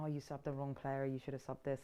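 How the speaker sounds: ordinary talk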